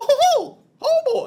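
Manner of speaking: squeaked out high, loud and slow. Trying a Mickey Mouse impression after the other speaker's attempt: Mickey Mouse voice. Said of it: "That was not that great either".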